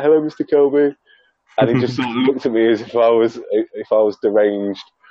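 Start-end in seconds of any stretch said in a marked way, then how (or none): 0.0-0.9 put-on starstruck giddiness, high-pitched and all-excited. Retelling meeting a photographer at a show: imitating own excited greeting. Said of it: "got a bit, like, all excited, and I was like".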